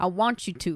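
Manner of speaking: growling dog voice. Retelling a scene, voicing the dog holding a man's neck: growling dog voice.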